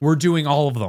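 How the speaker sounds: put-on authoritative, commanding, bossy, no-arguments tone. Retelling what she said at the turnstiles, in a mock-commanding voice. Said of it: "in some of the most commanding voice I've ever heard out of her".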